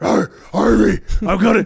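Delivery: breathless gravelly growl. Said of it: "garbled yelling, it was he was always out of breath".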